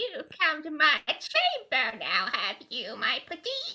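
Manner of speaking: wicked witch gremlin voice, swooping in pitch. Asked about a gremlin voice, the speaker does a mock audition in gremlin voice. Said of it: "that's [name]'s audition for Wicked Witch".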